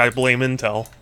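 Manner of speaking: ordinary talk, nothing marked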